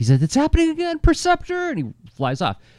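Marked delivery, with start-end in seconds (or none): 0.2-1.7 very high voice, pitched right up. Recounting a cartoon scene, the speaker quotes the line in a pitched-up Dick Gautier voice. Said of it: "pitches up his voice when he does it".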